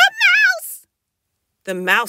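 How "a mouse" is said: shrill, very high squealing cry.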